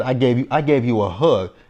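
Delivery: ordinary delivery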